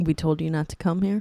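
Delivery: ordinary delivery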